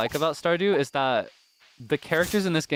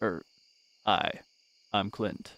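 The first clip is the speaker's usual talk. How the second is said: low, soft, flat monotone, very slow, breathed out; 5 semitones lower, 5 dB quieter than usual. Voicing the socially awkward character Clint, in a low, monotonous, soft-spoken Clint voice. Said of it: "very low, monotonous, soft-spoken".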